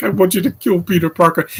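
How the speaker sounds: mock crying voice. Retelling a movie scene, imitating Topher Grace crying. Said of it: "he's just crying like a bitch".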